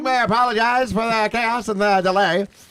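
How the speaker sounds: put-on old-timey announcer voice. Playing that guy in an improvised skit, 1920s announcer impression. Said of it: "That is a great nineteen twenties impression".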